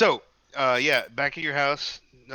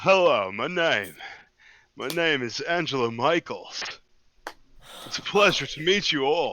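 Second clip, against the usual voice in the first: manly, heroic, hero-type masculine delivery. Introducing a character to the group: heroic masculine voice. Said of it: "This man sounds heroic and masculine".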